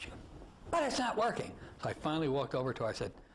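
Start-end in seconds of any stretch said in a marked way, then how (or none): 0.7-1.5 put-on loud yell with a Yiddish accent.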